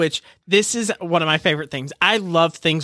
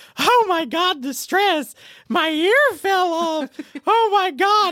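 high-pitched shrieking scream of alarm; 12 semitones higher than usual. Recounting what happened on a show, the speaker acts out her scream: retelling a scream. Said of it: "she screams".

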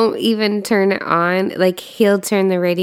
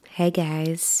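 low, soft, deliberately deepened put-on voice; 3 semitones lower, 9 dB quieter than usual. A wife greets podcast listeners at the episode's start, in a put-on deep voice. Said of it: "Why is your voice so deep".

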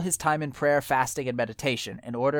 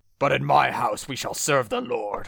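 big, resounding, booming voice. Acting out a man quoting a Bible verse: booming voice. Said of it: "this booming voice like".

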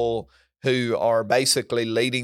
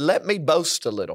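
put-on sarcastic tone, higher; 5 semitones higher than usual. Retelling a Bible passage, quoting Paul: imitating Paul's sarcastic tone. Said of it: "in a bit of a tongue-in-cheek, sarcastic way".

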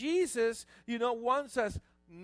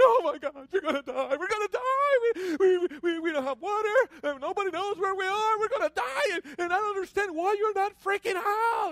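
high, frantic, stumbling panicked wail, "die" drawn out; 9 semitones higher, 4 dB louder than usual. Telling a joke about two stranded men, imitating a panicking man. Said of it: "The guy freaking out is going".

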